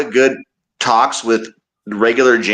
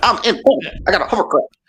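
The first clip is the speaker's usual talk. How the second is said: high-pitched, boastful politician-style voice; 6 semitones higher than usual. Imitating Ross Perot to another speaker: Ross Perot impression. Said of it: ""Vote for me".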